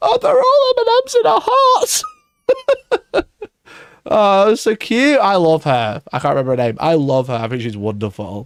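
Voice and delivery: emotional, crying, high swooping gushing voice. Speaker feels left out of the Miniature Masters crew, tearful and emotional. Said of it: "I'm crying".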